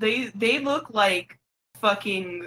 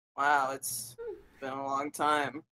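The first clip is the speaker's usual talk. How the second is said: dry, understated, low, bone-dry, no reaction; 6 semitones lower, 8 dB quieter than usual. Pitching a comedy bit, voicing the Viking guy as deadpan as possible. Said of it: "the most deadpan".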